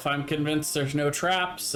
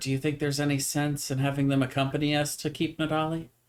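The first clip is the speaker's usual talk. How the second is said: acted whispering. Whispering a question to a companion in character: whispering in character. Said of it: "I'm gonna whisper".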